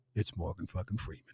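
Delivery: hushed, breathy, soft voice. Retelling an actor's first words, imagined as God speaking: Morgan Freeman voice of God. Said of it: "Imagine the Lord saying".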